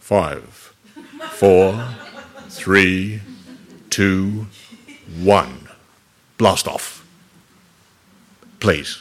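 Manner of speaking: lovely baritone, very slow and drawn out. Imagining a man counting down a rocket launch: lovely baritone voice. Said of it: "the man with a lovely baritone voice saying".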